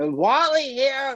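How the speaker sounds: high, swooping, cartoonish put-on voice. Remembering a man who had a cartoon voice, doing Wally Bogue's cartoon voice. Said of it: "he had like a cartoon voice".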